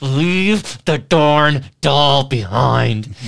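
slow words ground out through clenched, gritted teeth. Retelling what Cody said while pulling him out, imitating gritted-teeth speech. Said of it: "and with teeth gritted".

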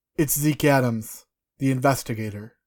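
usual speaking voice

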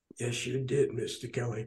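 acted-out whisper. Recalling what the listener whispered back to them: retelling a whisper. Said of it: "And you whispered to me".

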